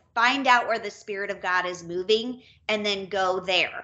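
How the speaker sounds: ordinary talk, nothing marked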